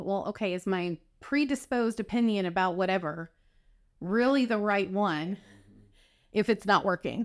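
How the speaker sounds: usual speaking voice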